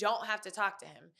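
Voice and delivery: imitated frustrated, exasperated tone. Retelling what a manager said while holding the door: imitating a frustrated manager. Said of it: "is visibly frustrated and is like".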